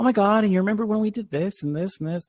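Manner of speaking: very high, rushed, rattled-off gushing chatter. Mocking how an annoying friend talks, mimicking an annoying friend. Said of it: "like her voice is like".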